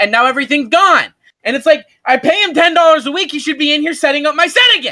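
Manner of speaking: very high-pitched, angry, fuming rant. Complaining to the guys watching that his set is messed up, getting fumed. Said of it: "I'm getting real fumed right now".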